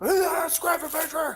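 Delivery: acted-out very high, shrill, screaming yell. Imagining a viewer correcting a word at the screen: imitating someone screaming. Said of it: "He's probably screaming at the fucking s-, screen".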